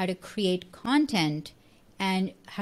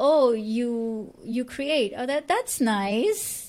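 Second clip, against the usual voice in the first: mock-condescending, put-on condescension; 4 semitones higher than usual. Describing how people once reacted to creators, mimicking a condescending tone. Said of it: "kind of like a condescending tone".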